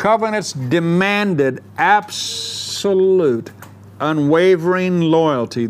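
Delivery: very slow, deliberate, every word laid out. Speaker goes over a point on covenants so listeners get it, saying it slowly. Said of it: "I'm saying it slow".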